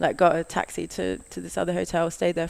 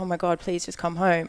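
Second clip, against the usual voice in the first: put-on panicked, frantic pleading tone. Retelling how a panicking mum begged on the phone: imitating a panicked mum. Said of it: "she's freaking out".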